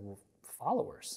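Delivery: put-on dry, sarcastic delivery. Retelling someone's answer about being a leader: imitating a sarcastic reply. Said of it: "kind of sarcastically and said".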